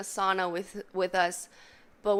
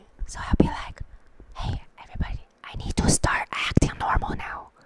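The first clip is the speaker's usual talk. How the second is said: hushed whisper, under the breath. Retelling talking to chat in the sauna after a guy came in: imitating own whisper. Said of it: "But I started whispering".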